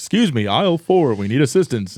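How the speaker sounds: goofy put-on store-intercom announcer voice. Recalling how he talked over walkie-talkies, the speaker does his stupid radio voice. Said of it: "I would talk like that over the walkie talkies".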